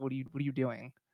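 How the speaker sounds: mock exasperated, fed-up, at-the-end-of-rope tone. Voicing a character waiting on someone: exasperated.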